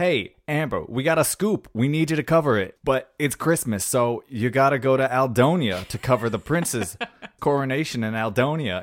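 put-on loud, high New York–Jersey accent. Retelling the boss's orders in a movie recap: imitating a stereotypical New York businesswoman. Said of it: "the most stereotypical, like, New York, New Jersey businesswoman".

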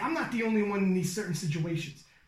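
ordinary talk, nothing marked

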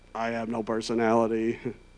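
put-on low, deadpan, stoic, flat English accent. Mocking how shows portray Jesus as an emotionless robot: mock-stoic Jesus, English accent. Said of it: "he's got like an English accent and he's like".

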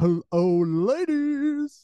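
very high, swooping cartoon devil, "ladies" stretched. Asked to voice a cartoon character, the speaker offers the devil guy instead, devil guy impression. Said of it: "I could do the devil guy who's like".

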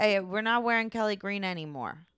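put-on Delaware County Philadelphia accent. Voicing a woman in a movie with the new Eagles logos: little Delco accent. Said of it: "She would have gone with the little like Delco accent".

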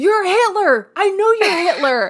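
shrill, very high yell. Retelling how the group yelled around a crowded picnic table, retelling yelling. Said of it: "just yelling like".

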